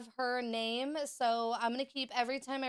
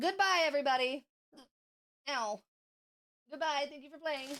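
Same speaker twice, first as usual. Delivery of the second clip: hiccuping while speaking, higher; 3 semitones higher than usual. Saying goodbye to the other players, talking with hiccups. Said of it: "I keep hiccuping".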